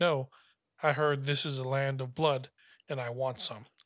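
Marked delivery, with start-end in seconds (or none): none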